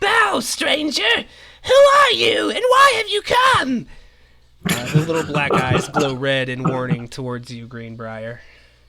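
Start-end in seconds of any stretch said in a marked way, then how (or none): 0.0-3.9 very high, loud, swooping, shrill creature call. Narrating to a player, a small creature challenges the stranger in a shrill voice. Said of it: "It cries out in a shrill voice towards you".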